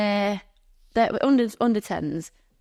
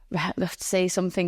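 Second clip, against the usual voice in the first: ordinary talk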